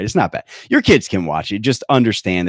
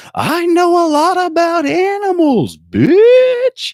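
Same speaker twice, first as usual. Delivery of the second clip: mock child yell, very high, very slow, loud, "bitch" stretched; 6 dB louder than usual. Retelling what a little kid yelled: imitating a child yelling. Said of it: "I then hear her yell".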